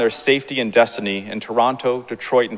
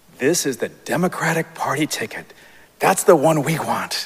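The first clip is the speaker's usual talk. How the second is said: imitated whisper, higher pitch; 4 semitones higher than usual. Retelling how Mom showed the voting booth names: imitating a whisper. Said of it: "Mom leans over and whispers to me".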